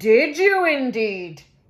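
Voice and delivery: loud, growly, growling talking-stone voice. Reading a story aloud, the stone answers the fox in a growly voice. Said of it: "said the growly voice".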